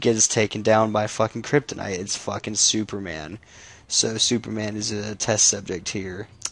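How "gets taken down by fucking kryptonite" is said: ordinary talk, nothing marked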